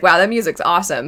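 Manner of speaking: normal talking voice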